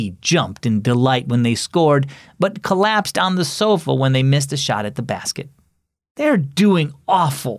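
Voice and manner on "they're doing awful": fed-up, sour, disgusted tone. Marco watches his team drop several points behind, speaking in disgust. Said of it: "Marco said in disgust".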